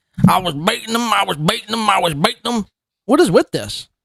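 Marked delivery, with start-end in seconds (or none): 0.3-2.7 put-on light hint of a Southern accent.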